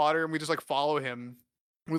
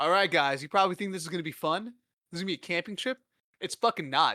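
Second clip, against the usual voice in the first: ordinary delivery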